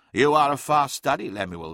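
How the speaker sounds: ordinary delivery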